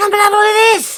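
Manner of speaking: high, loud, excited yell. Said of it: "yell out to you".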